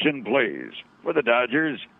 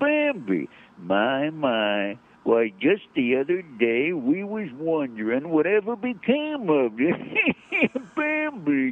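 put-on elderly old-man storyteller voice, stretched-out "my"; 3 semitones higher than usual. Describing the owl who narrates the Bambi discs, doing Friend Owl old-man voice. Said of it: "He sounds like an old man".

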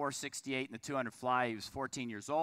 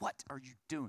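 mock angry, indignant, irate tone; 6 dB quieter than usual. Retelling a phone call from an irate mother: imitating irate Debbie. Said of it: "she was irate".

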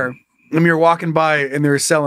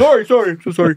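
mock talking with mouth full of food, higher pitch; 5 semitones higher, 3 dB louder than usual. Acting out a store customer apologizing: pretending to talk with mouth full. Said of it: "He's got a mouthful of meatball".

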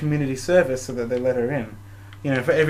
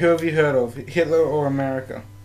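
ordinary talk

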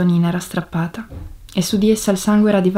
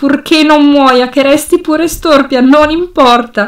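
very loud, slow, high, drawn-out shout; 7 semitones higher, 9 dB louder than usual. Jumping to his feet, a man addresses the doctor, shouting toward the ceiling. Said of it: "Gridava verso il soffitto".

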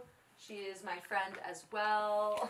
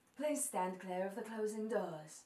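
train platform PA announcer voice. Recording a line in the requested MTA voice: MTA subway announcer voice. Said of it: "that M T A voice".

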